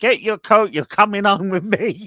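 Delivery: play-acted very high, shrill, loud shout. Telling how a mother dragged her son out, acting out her shouting. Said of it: ""Please don't shout!"".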